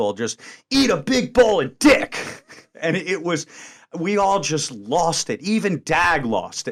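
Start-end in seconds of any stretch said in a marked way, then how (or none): 0.1-2.2 mock hard, forceful delivery, very loud and high. Retelling a remark that made everyone lose it, even Dag, imitating a very forceful tone. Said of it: "the tone was just kind of very forceful".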